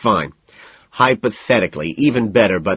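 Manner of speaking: ordinary delivery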